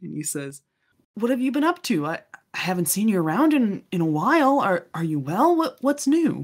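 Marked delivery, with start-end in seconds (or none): 1.1-6.4 bubbly, well-spirited, eager, excited, pitched-up voice. Voicing an excited son greeting an old schoolmate: excited, well-spirited voice. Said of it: "his very excited, well-spirited son".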